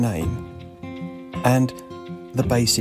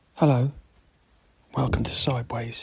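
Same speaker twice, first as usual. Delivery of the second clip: hushed whispering voice. Podcast host welcomes listeners from bed, waiting for the alarm, whispering. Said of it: "I'm whispering because I'm in bed".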